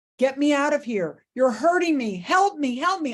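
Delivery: mock, high, frantic, agitated screaming. Recounting waking up in recovery after surgery, retelling own screaming. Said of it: "I wake up screaming".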